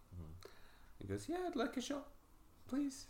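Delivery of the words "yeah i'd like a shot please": very high, squeaky, soft woman's voice. Voicing Abby walking up to ask for a shot; female voice for Abby. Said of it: "This is a female accent".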